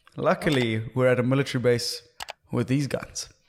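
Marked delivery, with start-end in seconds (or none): none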